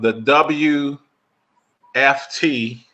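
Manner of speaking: very slow, deliberate, drawn-out, spelled out letter by letter. Announcing a game of the week on air: letters said very slowly. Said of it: "I always have to say that really slowly".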